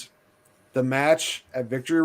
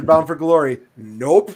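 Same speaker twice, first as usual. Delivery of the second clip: usual speaking voice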